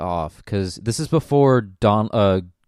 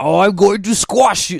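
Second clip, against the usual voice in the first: very high, shrill, loud, bad German accent; 11 semitones higher, 6 dB louder than usual. Describing a bit's offhand puppet comments, doing a failed German accent. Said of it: "That's not a German accent".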